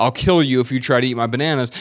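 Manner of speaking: ordinary delivery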